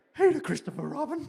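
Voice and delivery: very high, squeaky cartoon bear voice. The speaker demonstrates an impression while discussing movies, Winnie the Pooh voice. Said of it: "That's my Pooh impression there".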